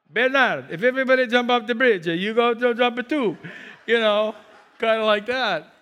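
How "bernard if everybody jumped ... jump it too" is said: put-on spoken with an Italian accent. Quoting what a parent used to say, italian accent. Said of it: "mine said it with an Italian accent".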